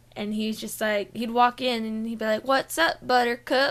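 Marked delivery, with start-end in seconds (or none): 2.4-3.7 put-on heavy Georgia accent, laid on thick. Recalling a regular Subway customer's greeting, imitating a heavy Georgia accent. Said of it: "he just had a heavy Georgian accent".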